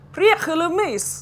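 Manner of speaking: booming, loud, high-pitched bellow. Footman holding the door open calls out to the household, bellowing. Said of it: "he bellowed".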